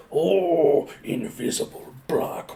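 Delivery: breathy, hushed whisper, Japanese voice-actor style. Recalling an anime attack line, imitating the Japanese voice actor's delivery. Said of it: "the way that the Japanese guy says it".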